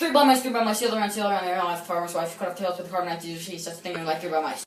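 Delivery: rattled off way too fast, words crammed together. Casey reads a nursery rhyme aloud as instructed, speaking way too fast. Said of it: "speak way too fast".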